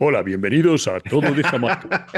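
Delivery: affected, put-on radio and podcast announcer voice. Recalling how they opened their first podcast episode, put-on deeper voice. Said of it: "Y además ponía una voz".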